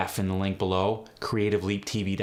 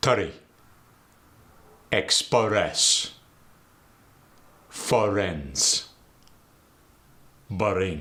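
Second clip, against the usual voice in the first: Arabic-accented English; 3 dB louder than usual. Teaching dialect features, demonstrating example words in an Arabic accent. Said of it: "in the Arabic dialect, a vowel gets thrown in there".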